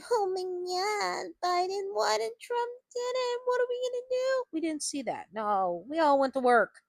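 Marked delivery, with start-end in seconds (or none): 0.1-4.4 very high, whiny wail with God drawn out. Imitating supporters whining online about an election loss: mock whining. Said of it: "get on the internet and start whining".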